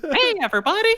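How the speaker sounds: high-pitched, loud, squeaky delivery. Suggesting what to do on walking into the room after being hired, in a Mickey Mouse voice. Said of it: "just do Mickey Mouse".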